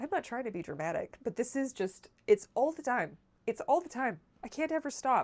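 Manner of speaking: tearful, teary talk through crying. Speaker filming a sewing video keeps breaking down; crying, teary voice. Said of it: "I do need to stop crying at some point here".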